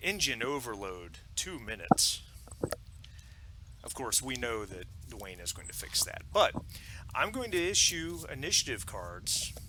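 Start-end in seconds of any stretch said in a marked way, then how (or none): 0.0-2.2 very calm, serene, unbothered delivery. Running a game, the narrator voices Apollo's announcement in a calm Apollo voice. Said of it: "announces in a very calm voice".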